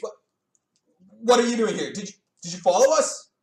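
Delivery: high, loud, shocked and startled stammer. Voicing a shocked halfling who finds others followed him: shocked halfling voice. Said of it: "there's clearly shock on his face".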